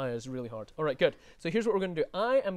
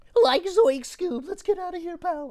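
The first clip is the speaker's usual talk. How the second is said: very high, loud, spooked voice; 13 semitones higher, 7 dB louder than usual. Offering a name in a voice guessing game, Shaggy Rogers voice. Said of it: "Shaggy Rogers".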